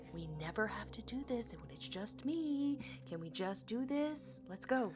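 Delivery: speaking in a low voice. Retelling what they said to a companion while being inspected; lowered voice. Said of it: "I lower my voice though".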